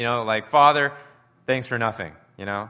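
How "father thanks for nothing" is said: mock bitter sarcasm, much louder. A speaker acts out a prayer he says would never be prayed, in mock bitter sarcasm. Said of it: "He's not bitterly joking".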